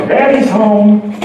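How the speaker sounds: mock very cheery voice. Recalling their dad coming home each afternoon: imitating dad's very cheery greeting. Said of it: "in a very cheery voice".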